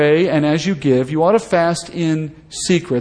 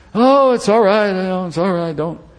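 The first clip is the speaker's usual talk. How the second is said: mock modest voice, higher; 3 semitones higher than usual. Acting out a fasting Pharisee brushing off praise: put-on fake humility. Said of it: "All that fake humility".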